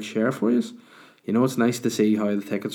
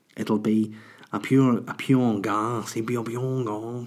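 very bad, put-on Irish brogue. Inviting listeners to a stand-up show: bad put-on Irish accent.

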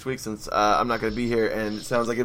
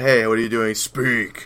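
put-on growling voice. Retelling how the principal talks in the dub: imitating the principal's growl. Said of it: "always growl at the end".

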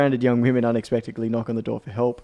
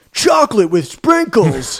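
very high, very loud, belted, swooping line; 10 semitones higher, 9 dB louder than usual. Retelling a movie trailer line in a Keanu Reeves delivery. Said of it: "delivered in a Keanu way".

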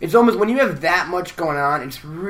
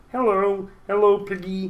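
put-on froggy puppet voice, much higher; 5 semitones higher than usual. Acting out the Muppets, greeting Piggy in a Kermit the Frog voice. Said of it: "Kermit the Frog".

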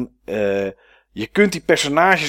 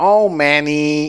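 put-on, imitated nasal character voice. Describing a show character and imitating how they talk, in a nasal voice. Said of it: "je heeft ook een beetje een nasale stem".

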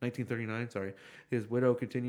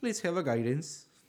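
slipping into an Irish accent, pitched up; 6 semitones higher, 3 dB louder than usual. Joking about needing a guide on the tours, speaker slips into an accidental Irish-sounding accent. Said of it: "Turn Irish instantly".

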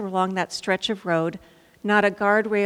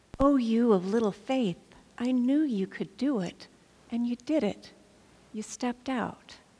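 play-acted soft, tender, affectionate parental voice; 3 semitones higher, 5 dB quieter than usual. Imagining Jesus speaking to Peter back in the boat, loving parent tone. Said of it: "tone of voice could have been like that of a loving parent".

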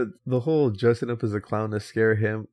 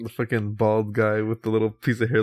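plain

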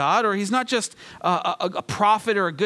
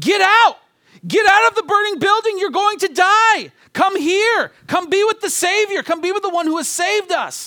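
very high, desperate, pleading, urgent shout; 11 semitones higher, 7 dB louder than usual. Showing how believers should plead with others, as an urgent warning shout. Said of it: "like somebody shouting to another person in a burning building".

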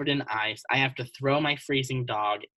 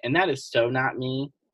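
plain

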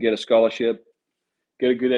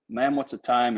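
normal talking voice

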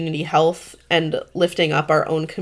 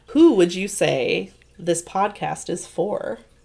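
game show host, quiz-show announcer style voice; 3 dB quieter than usual. Asking the guest who this podcast is for, in a game show announcer voice. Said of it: "sorry that I said that like a game show announcer".

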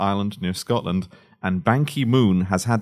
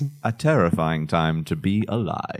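creepy, spooky, eerie ghost-story voice; 3 semitones lower than usual. During [name]'s scary feature segment about February, a spooky voice. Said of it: "I said that in a spooky way".

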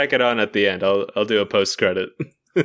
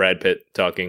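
plain

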